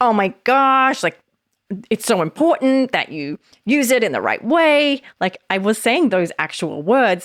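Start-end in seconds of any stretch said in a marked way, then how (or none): 0.0-5.0 put-on high, exasperated, insistent frustrated tone. Showing how a frustrated tone changes how words land: demonstrating a frustrated tone. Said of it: "If the tone of my voice as I said that was like".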